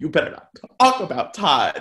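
upset, swooping voice, cracking a little. Recapping an episode, quoting a cast member getting upset: imitating Candy's upset cracking voice. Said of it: "she has that little crack in her voice".

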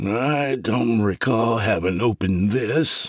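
words smeared together. Reading the doctor's line as he notices the window, slurred speech. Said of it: "the doctor said with slurred speech".

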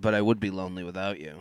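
muttering under breath. Retelling what he says after saying something: imitating muttering under his breath. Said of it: "under his breath, he'd be like".

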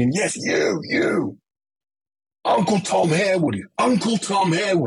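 acted, violent, high, drawn-out screaming. Recounting a stranger yelling at him on Carnaby Street, retelling a stranger's screaming. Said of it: "he was screaming at me".

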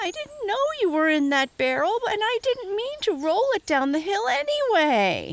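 very high, swooping, whiny protest. Narrator reading Reddy's reply once he got his voice, whining. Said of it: "whined Reddy once he got his voice".

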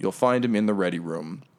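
ordinary talk, nothing marked

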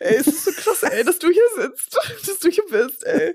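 thrilled, giddy babble through laughter, high and fast. Speaking to a woman who may have been in a movie: so excited, laughing. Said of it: "ich bin so aufgeregt".

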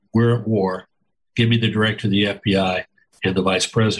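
put-on very calm, steely voice. Recalling a man who walked in deliberate that day and gave orders, imitating his very calm, steely voice. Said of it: "he very calmly said".

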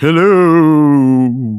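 drawn-out, spooky, ghostly haunting voice. Co-host greets the podcast audience in a spooky haunting voice. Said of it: "That's my haunting voice".

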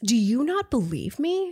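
incredulous, disbelieving tone. Recounting a woman's conversation with a man, mock-incredulous question. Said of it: "She incredulously asks".

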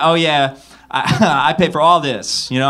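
acted-out sassy, cocky swagger with a little funk. Retelling being stopped by store security, retelling a cocky, funky voice. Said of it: "I had like a little funk to my voice".

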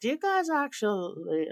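put-on Montana accent, pitched very high. A Canadian acting out a shopping trip down to the States, in a Montana accent. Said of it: "this is my greatest Montana accent".

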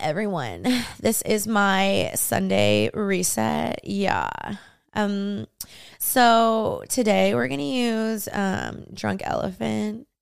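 very slow, dragging, creaky vocal fry. Complaining about a TikTok trend, speaker mimics how girls talk: vocal fry imitation. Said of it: "it's when girls talk like this".

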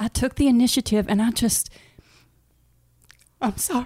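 voice choking up, catching with emotion. Telling others about taking the initiative, getting emotional. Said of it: "he's getting emotional".

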